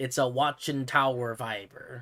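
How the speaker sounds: slow, clumsy, put-on Swedish accent. On a stream, describing a watchtower build, the speaker tries a poor swedish accent. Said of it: "that's my poor attempt at a Swedish accent".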